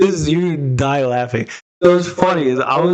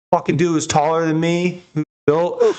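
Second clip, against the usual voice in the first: ordinary delivery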